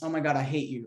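mock playful teasing tone. Retelling a friend's words while they were making fun of each other: imitating a teasing tone. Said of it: "she said it in a way of like".

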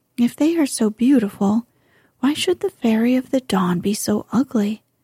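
ordinary delivery

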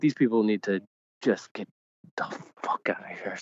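hushed, whispering voice. Complaining about casual fans so a son can't hear swearing: whispering. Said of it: "I'm whispering so that my son can't hear".

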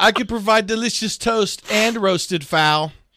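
high, self-important, narcissistic talking toaster voice. Giving a toaster oven a voice: narcissistic toaster oven voice. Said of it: "the toaster oven was the most narcissistic".

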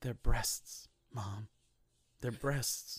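solemn hushed whisper, grave, word by word. Quoting a scene from Carrie in a solemn Carrie voice. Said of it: "Carrie's solemn".

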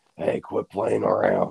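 put-on rough, creaky, croaking aged voice. Imitating the old actor-director pitching a movie: imitating the actor's voice. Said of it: "and he still has that voice".

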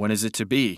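ordinary delivery

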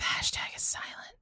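soft, hushed, breathy, barely voiced whisper. Recalling how the two of them used to say the name, retelling a whisper. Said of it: "We used to whisper it".

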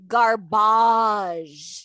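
put-on loud French-accented speech. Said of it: "all caps with a few extra A's after the B and a French accent".

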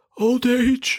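put-on old wizardly voice, pitched way up. Giving a reason as a joke in a Dumbledore impression. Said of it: "I've never heard [name]'s Dumbledore impression before".

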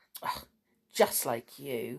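snide, low, soft, sneering tone. Narrator reading a children's story, voicing Sneery's reply: Sneery's sneering voice. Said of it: "said Sneery in a sneering voice".

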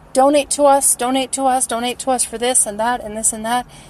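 plain

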